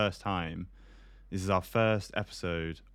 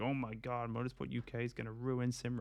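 fake American accent, hushed and pitched up; 4 semitones higher, 7 dB quieter than usual. Retelling the horrible rumors seen on Facebook and Twitter, in a mock American accent. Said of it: "i don't know why they're american in oh. this voice".

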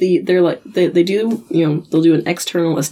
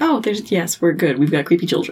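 plain

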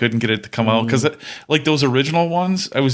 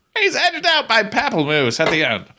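put-on old-time horse-race announcer voice, much higher pitched; 11 semitones higher than usual. Mock-calling a photo finish between drinks, old-time horse race caller. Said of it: "an old horse track racer".

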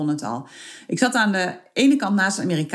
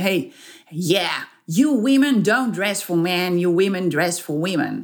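put-on broad, heavy Texan accent, laid on thick; 2 semitones lower than usual. Retelling what an American man at an international gathering said, in a heavy Texan accent. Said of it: "met een heel zwaar Texaans accent".

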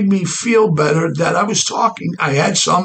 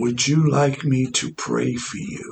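gentle, soft, low, mellow, reverent holy-sounding voice; 5 semitones lower, 6 dB quieter than usual. Retelling what an unseen voice beside your gurney said, soft mellow godly voice. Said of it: "in a soft mellow godly voice".

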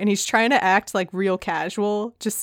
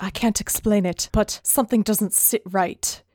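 put-on ominous voice. Retelling a moment where Legolas senses something wrong: imitating ominous Legolas. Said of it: "Legolas is being very ominous".

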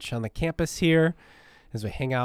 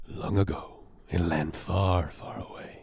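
announcer voice from movie trailers; 6 semitones lower than usual. Describing the voice who does movie trailers, the speaker demonstrates a movie trailer announcer voice. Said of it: "the voice who does the movie trailers".

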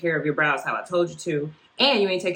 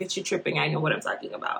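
mock-flippant, offhand tone, spoken quieter; 3 semitones lower, 6 dB quieter than usual. Retelling what a woman said when told to fix the problem, mock-flippant brush-off. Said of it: "very much like".

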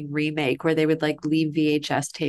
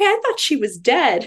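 sudden, very high-pitched, loud blurt; 9 semitones higher, 6 dB louder than usual. Retelling waking up at a film's end and calling out: imitating speaking very loudly. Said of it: "I very loudly from the back of the room".

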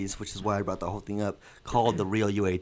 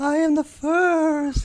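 put-on ghostly voice, louder; 7 dB louder than usual. A mysterious co-host introduces themselves on a film show, ghost voice. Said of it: "I have a ghost voice now".

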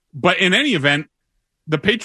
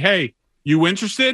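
plain

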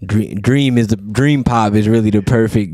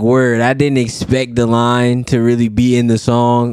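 plain

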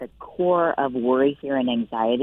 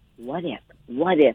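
put-on whisper. Acting out the enemy whispering doubts: imitating a whisper. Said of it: "and whisper".

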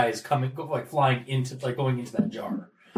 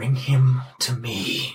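faint voice through gritted teeth; 4 dB louder than usual. Narrating a tabletop game, the speaker voices what a player hears in his mind: faint gritted-teeth voice. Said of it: "almost like your gritted teeth voice".

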